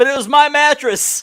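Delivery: high-pitched yell. Narrating a video, the speaker voices another man's protest: imitating someone yelling. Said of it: "Johnny's yelling".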